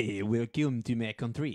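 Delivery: put-on Québécois-style French Canadian accent. Asked by the other speaker to do a French Canadian, the speaker performs a French Canadian accent. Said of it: "Go do a French Canadian".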